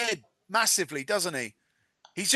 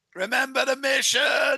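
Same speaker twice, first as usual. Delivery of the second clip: mock screaming, higher pitch; 4 semitones higher than usual. Imagining someone screaming a reminder at another person: acting out someone screaming. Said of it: "started screaming at him".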